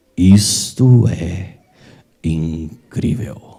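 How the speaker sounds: very low, grave, deep, booming announcer voice. Recalling a video where a voice spoke at the end: deep voice. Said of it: "aquela voz grave falava assim".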